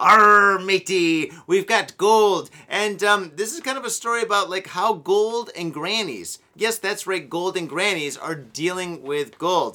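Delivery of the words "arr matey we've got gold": put-on pirate voice, very loud, booming, drawn out. Joking about smuggled gold: pirate voice. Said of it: "pirate gold".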